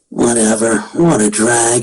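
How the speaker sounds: very low character voice, slow and drawn out. Speaker showing the one character voice they can still do, Shikamaru voice. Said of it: "I can still do Shikamaru".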